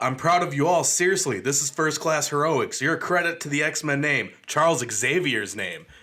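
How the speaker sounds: loud, heavy, insincere sarcasm. Retelling what Scott says to the team: imitating sarcastic delivery. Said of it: "Scott doing any type of sarcasm".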